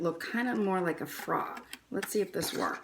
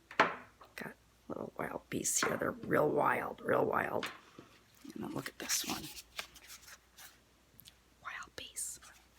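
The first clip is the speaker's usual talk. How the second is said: steady stage whisper throughout; 4 semitones lower, 4 dB quieter than usual. Whispering because the speaker's kids are doing homework in the other room. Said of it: "I'm whispering because my kids are doing their homework".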